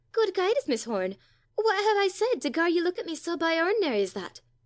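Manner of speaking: voice trembling with fear. Mrs. mellis replies to miss horn, voice trembling with fear. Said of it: "Mrs. Mellis's voice trembled with something very like fear as she replied".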